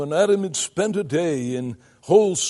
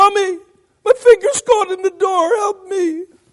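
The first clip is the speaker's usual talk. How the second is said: put-on loud, very high squealing little kid voice; 8 dB louder than usual. Speaker imagines a little boy with his finger caught in a door: imitating a child squealing. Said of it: "he would have squealed".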